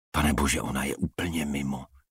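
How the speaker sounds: ordinary delivery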